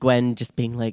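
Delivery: ordinary delivery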